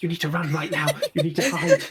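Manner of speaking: muttered quietly under the breath. Warning another character to run, in character: said under one's breath. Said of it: "I'm gonna say under my breath to Judy".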